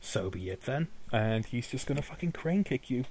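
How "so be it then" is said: snarling, threatening tone. Voicing a character who snarls at a player before attacking: snarling. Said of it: "He sort of snarls at you and goes".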